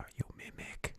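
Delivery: very quiet, cautious, hushed, breathy whisper. Amlal approaches a chest cautiously and whispers to it. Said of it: "and then whispers".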